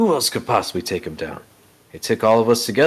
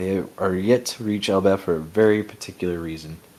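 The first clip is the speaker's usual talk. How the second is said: ordinary delivery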